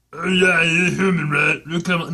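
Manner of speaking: guttural, coarse voice. A character answers someone who has just introduced himself, in a guttural, coarse Katago voice. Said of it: "It is guttural and coarse".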